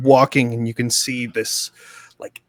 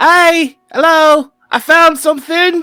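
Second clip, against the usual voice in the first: yelling, much higher-pitched and louder; 10 dB louder than usual. During the game, a player's character calls down to the others, yelling from the sky. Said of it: "from the sky yell".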